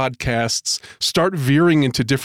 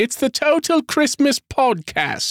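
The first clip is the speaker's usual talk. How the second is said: very high-pitched cartoon-style voice; 11 semitones higher than usual. Introducing the podcast, the speaker does a Peppa Pig voice. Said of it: "Was that your Peppa Pig impression?".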